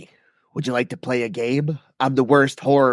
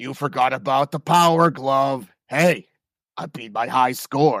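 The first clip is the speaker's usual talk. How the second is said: put-on horror villain voice. Taking a turn voicing a Freddy Krueger line: Freddy Krueger impression. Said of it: "Freddy Krueger".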